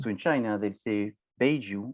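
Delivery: stress placed on baijiu.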